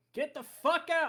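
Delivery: all-out, high-pitched yelling shout. Voicing a character running through the stacks: yelling. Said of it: "just yelling".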